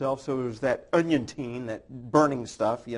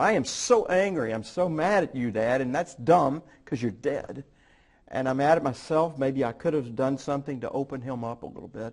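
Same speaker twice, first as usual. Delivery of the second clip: ordinary talk, nothing marked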